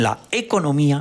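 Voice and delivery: "economía" said with two stressed syllables.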